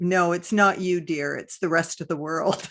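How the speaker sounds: play-acted voice dripping with heavy sarcasm. Retelling what a mother used to say: imitating dripping sarcasm. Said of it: "in a voice dripping with sarcasm".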